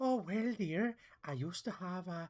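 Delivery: slow, drawled put-on voice, botched and half failing. Describing how the pilot talks: attempted Miss Doubtfire voice. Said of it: "He talks a bit like".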